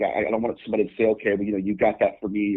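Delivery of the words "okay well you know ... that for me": ordinary talk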